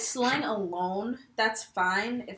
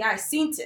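usual speaking voice

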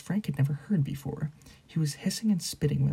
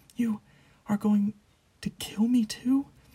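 hoarse, dry-mouthed voice, much higher pitch; 7 semitones higher than usual. Answering a cold voice, a man speaks suddenly hoarse and dry-mouthed. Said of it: "Wormtail's voice suddenly sounded hoarse as though his mouth had gone very dry".

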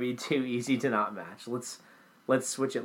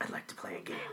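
very quiet, breathy, hushed whisper of horror; 6 semitones lower, 12 dB quieter than usual. Quoting a horror villain's line after being reminded of him: Jigsaw voice. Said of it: "reminded me a little bit of, uh, Jigsaw".

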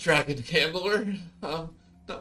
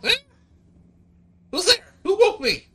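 very high, loud, shrill, startled little scream; 14 semitones higher, 9 dB louder than usual. Voicing a small startled dragon creature woken from sleep: startled scream. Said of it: "jumps up with a little startled scream going".

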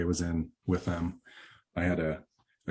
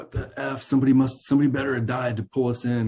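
pitched-up, exasperated, frustrated yelling outburst; 7 semitones higher, 4 dB louder than usual. Speaker recalls their own past outburst, retelling a yell. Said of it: "I remember even yelling".

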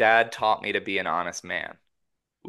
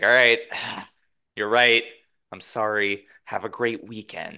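put-on restrained angry voice. Retelling a phone call in a scene: imitating Paul's held-back anger. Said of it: "swallows his, his anger".

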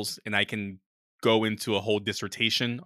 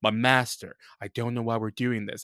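put-on emo voice. Imitating how Hayden Christensen sounds when playing Darth Vader: emo Hayden Christensen voice. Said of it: "he sounds so, like, emo".

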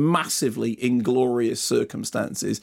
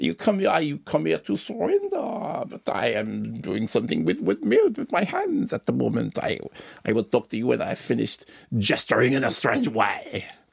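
put-on foppish French accent. Describing an actor's take on the Dauphin, the speaker does a foppy French Dauphin accent. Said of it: "That's disturbingly French".

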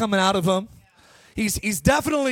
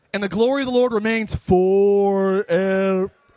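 put-on slow kid reading, every single word dragged out; 3 semitones lower, 3 dB louder than usual. Reading forever in a Bible verse, speaker does it like the young man from The Sandlot. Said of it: "I have to read it like the young man from The Sandlot".

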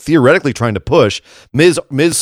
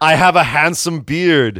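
slow, drawn-out, put-on Austrian accent; 3 semitones higher than usual. Describing a man who suddenly became Arnold Schwarzenegger: Arnold Schwarzenegger impression. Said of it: "I don't know why he became Arnold Schwarzenegger".

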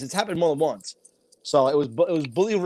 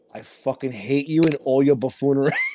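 put-on whisper; 2 semitones lower than usual. Retelling how an actor whispered an insult into another's ear: imitating a whisper. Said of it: "Tommy whispered in my ear".

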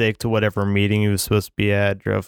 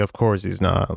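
usual speaking voice

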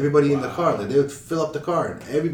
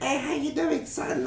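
shrill, very high, put-on little old lady voice; 13 semitones higher, 4 dB quieter than usual. Retelling how a man pretends to be an old lady on the mic to scammers; imitating an old lady's voice. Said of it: "he sounds like an old lady".

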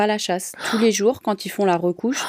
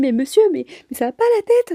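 sweet, cute, tiny voice, pitched up; 8 semitones higher, 3 dB louder than usual. Speaker imagines what a woman would have said to a man, imitating a small cute voice. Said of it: "avec sa petite voix là, trop mignonne".

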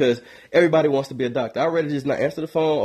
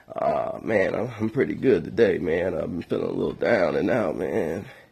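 very low, put-on fake sick, poorly voice; 9 semitones lower, 4 dB quieter than usual. Retelling answering a caller's phone call, in a fake sick voice. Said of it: "I answer with my sick voice".

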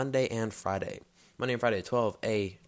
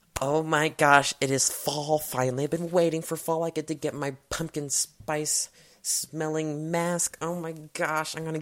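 put-on girlish voice; 4 semitones higher than usual. Asking listeners to picture him with a sweater on his head, the speaker does a girl impression. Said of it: "I made my girl impression".

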